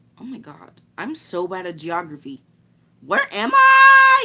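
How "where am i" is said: very high, very loud, long shrill voice crack on I. On a live stream, admitting they're bad at geography: long voice crack. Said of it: "That was the longest voice crack I've ever".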